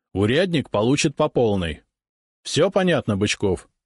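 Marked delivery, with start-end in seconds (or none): none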